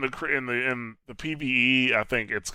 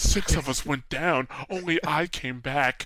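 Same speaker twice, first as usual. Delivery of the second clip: mock over-dramatic voice. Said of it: "her voice acting".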